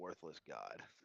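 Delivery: mumbling quietly under breath. Playing a character who mutters about a god: mumbling under his breath. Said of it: "gonna mumble under his breath".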